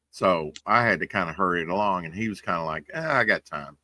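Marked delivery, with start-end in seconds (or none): 2.9-3.6 acted breezy, unbothered, casual tone. Retelling how a puppeteer with time to spare replied: imitating someone nonchalant.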